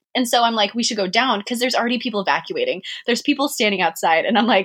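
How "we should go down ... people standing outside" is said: normal talking voice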